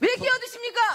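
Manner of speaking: shouting, high-pitched and heated.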